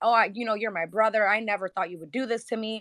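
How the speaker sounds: mock tearful, crying voice. Retelling what a woman kept saying to her brother, imitating someone crying. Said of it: "she cried to him and kept telling him like".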